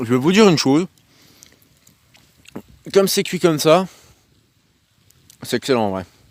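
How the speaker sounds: talking with mouth full. Speaker tasting food on video, talking with mouth full. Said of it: "je parle la bouche pleine".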